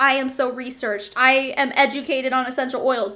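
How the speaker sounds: usual speaking voice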